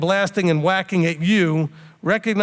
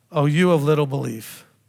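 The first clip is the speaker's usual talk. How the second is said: put-on disappointed rebuking voice, lower; 4 semitones lower than usual. Picturing the speaker's listeners worrying and panicking: Yeshua shaking his head in disappointment. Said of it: "picture him shaking his head like this and just looking down".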